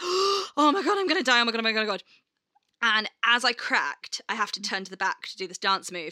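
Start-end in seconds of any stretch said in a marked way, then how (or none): 0.0-2.0 high, mortified, panicked horror. A performer retells her reaction to a mistake on stage, acting out past panic. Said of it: "my face just went from like".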